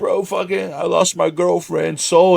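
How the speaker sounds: mock crying and sobbing through every word. Telling a story, the speaker acts out a man breaking down over his lost girlfriend: imitating someone crying. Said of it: "he starts like breaking down crying".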